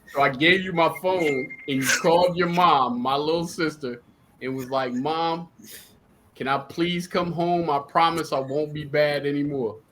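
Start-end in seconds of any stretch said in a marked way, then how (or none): 4.9-9.7 put-on child begging, slower. Speaker retells the listener phoning their mom on his phone, imitating a kid begging. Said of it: "you were copping please".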